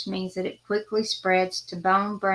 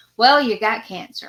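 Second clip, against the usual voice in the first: mock rude tone, louder; 3 semitones higher, 7 dB louder than usual. Retelling what a doctor said at an appointment: imitating a doctor speaking rudely. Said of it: "he said it very rudely".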